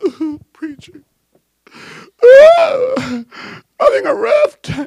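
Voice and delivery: very high, slow, drawn-out blubbering wail. Retelling a girl going to her pastor for help: imitating someone bawling. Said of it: "bawling her head off".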